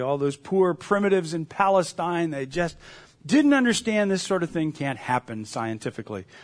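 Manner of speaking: normal talking voice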